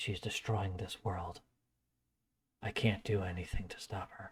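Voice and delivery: whispering. Voicing a character who covers his mouth and whispers to a player: whispering. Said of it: "he whispers something to you".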